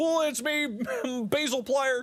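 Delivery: very high-pitched character voice. Playing a game, joking about the same impression: Basil Wolf doing Markiplier. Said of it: "It's like Basil doing Markiplier".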